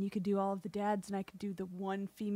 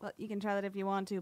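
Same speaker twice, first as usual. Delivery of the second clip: ordinary talk, nothing marked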